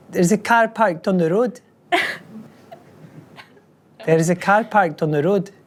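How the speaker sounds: put-on Scottish old woman voice. Showing the one line the speaker can do, in a scottish old woman's voice. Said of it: "in a Scottish accent is an old woman's voice".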